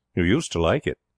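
ordinary delivery, nothing marked

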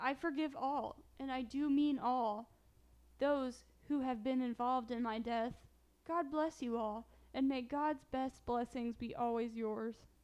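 ordinary talk, nothing marked

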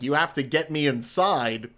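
normal talking voice

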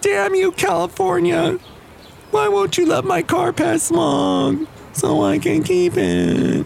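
mournful, sad, very high and slow. Lamenting a car that won't pass california smog, in a sad voice. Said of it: "Isn't this a great voice when you're sad, your sad voice?".

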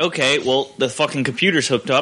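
ordinary talk, nothing marked

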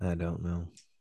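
soft, glum voice. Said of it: "Andrew, don't sound so glum".

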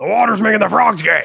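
loud, raspy, very high-pitched voice. Doing an impression when asked to repeat it: Alex Jones impression. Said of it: "Can you do your Alex Jones impression one more time?".

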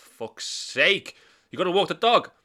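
acted exasperated, annoyed tone. Retelling a mate's reaction to having to walk the dog first; mock-annoyed friend. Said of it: "you get so annoyed with that".

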